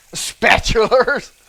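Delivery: very loud, high-pitched, botched cartoon voice. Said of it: "terrible Mister Krabs impersonation".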